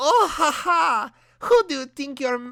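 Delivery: put-on fumbling, strong German accent, high and loud. Voicing Hitler as he stops Sonic in a story, Hitler voice, struggling German accent. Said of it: "What the fuck is a German accent right now?".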